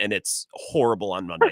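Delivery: plain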